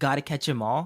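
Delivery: plain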